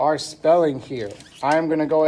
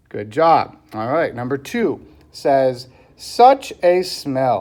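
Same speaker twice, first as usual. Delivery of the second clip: ordinary talk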